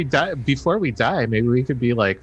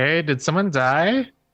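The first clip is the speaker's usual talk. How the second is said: calling out loudly; 5 semitones higher than usual. A player's character calls out toward a tent: yelling. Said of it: "I'm kind of like yelling to the tent".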